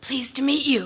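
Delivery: loud, rasping, scratchy voice. Narrator reads a woman greeting the narrator, in a loud, scratchy voice. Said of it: "she says in a loud, scratchy voice".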